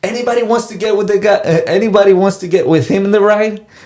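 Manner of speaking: very high, loud screamed call. Speaker retells a guy at the ride screaming to the waiting line: retelling a guy screaming. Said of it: "he starts screaming".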